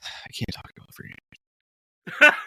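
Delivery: slow, revolted, disgusted hushed whisper. Retelling an executive's reply to a reporter: imitating a disgusted whisper. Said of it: "in a very disgusted, ... whisper thing".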